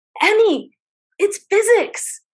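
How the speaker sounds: very high, shrill scream. Retelling a driving lesson with a teenage daughter: retelling a scream. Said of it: "I finally turn to her and scream".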